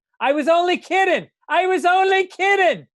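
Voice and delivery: put-on high cried-out voice in Irish accent. Telling a story, speaker acts out a wife screaming at her husband, retelling a scream in irish accent. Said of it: "with the Irish accent".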